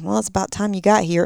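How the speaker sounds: put-on muttering under breath. Retelling own past words on arrival: imitating muttering under breath. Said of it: "under my breath".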